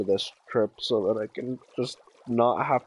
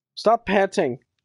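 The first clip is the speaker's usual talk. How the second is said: sudden, loud, high, flat-out yell; 9 semitones higher, 5 dB louder than usual. Bored, suddenly yelling at the dog: yelling. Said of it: "Just flat out yells".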